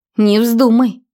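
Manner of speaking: cross, angry, abrupt voice. A woman cuts off the narrator, who plans to leave; angry interruption. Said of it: "сердито перебила меня".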